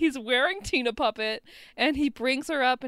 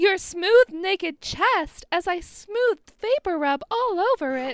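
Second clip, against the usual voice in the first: put-on high-pitched girlish voice; 6 semitones higher, 4 dB louder than usual. Retelling a scene to a co-speaker, in the high-pitched Tina voice. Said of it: "the high-pitched Tina voice".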